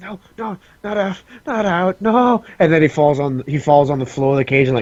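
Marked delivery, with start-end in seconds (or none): 0.0-2.4 very slow, high-pitched, panicked, freaked-out pleading. Voicing a caged knave who wakes and grabs the bars: panicked outburst. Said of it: "freaks out".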